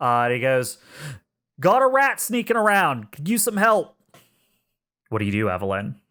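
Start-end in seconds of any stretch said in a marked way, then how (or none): 1.6-4.0 very high, loud shouted call. Voicing a big man calling down a hallway for help: shouting down a hallway. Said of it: "he shouts further down the hallway".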